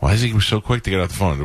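ordinary talk, nothing marked

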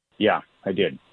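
unenthusiastic. Radio caller answering the hosts' question about an old school friend, unenthusiastic. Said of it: "you don't sound very thrilled about that".

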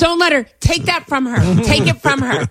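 high-pitched, loud yelling. Retelling Bobby Kelly yelling at passengers on a plane: imitating a yell. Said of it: "he starts yelling at everybody".

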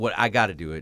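ordinary talk

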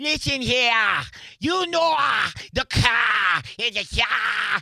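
bad overdone, very high, slow Boston drawl, stretched "car". Mocking an actor's overdone accent in a film: imitating a bad Ben Affleck Boston accent. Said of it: "he's just like".

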